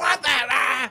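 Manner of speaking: furious angry outburst, broken off mid-curse. Recalling swearing at the TV over a show's ending, retelling a furious outburst. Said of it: "I was furious".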